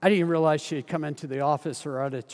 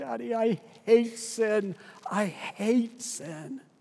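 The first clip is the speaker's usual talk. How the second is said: put-on, very slow, high, drawn-out tearful sobbing; 8 semitones higher than usual. A father retells what his daughter said while he held her, imitating her sobbing. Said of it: "and she was sobbing. She was going like".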